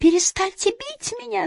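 very high, shrill yell. Joseph, being struck by Johnny, cries out at him: shouted. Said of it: "закричал Джозеф".

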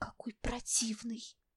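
whispering. In class, a pupil whispers about the new teacher. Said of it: "шепнула Лили".

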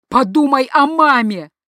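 very loud, high, desperate cry of despair. A father, watching his son's last movements, shouts in despair. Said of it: "в отчаянии прокричал отец".

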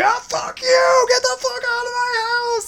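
very high yelling. Picturing your reaction to a hand coming through the window, acting out a yell. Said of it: "and I'm just yelling".

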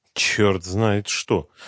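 grumbling under breath. Lukin mutters to himself during the commissioner's questioning; grumbling under his breath. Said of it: "вполголоса проворчал Лукин".

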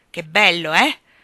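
slyly teasing. He speaks as the narrator holds a glass to his lips, mischievous. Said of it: "mi disse con malizia".

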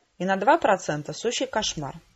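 plain

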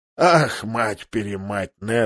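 rough, hoarse, rasping exclamation. The king, in bed, answers his friend leaning over him: hoarse voice. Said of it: "проговорил хриплым голосом король".

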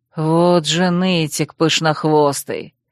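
rasped, grated through gritted teeth. Tending an injured, bleeding young man, he snaps at a whining fox; grated through teeth. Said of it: "сквозь зубы проскрипел Рольер".

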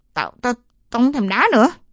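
quivering, trembling, unsteady voice, rising pitch. Fists clenched, the narrator speaks up among the other players, trembling voice. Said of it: "Tôi nói giọng run rẩy".

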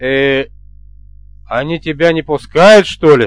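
plain

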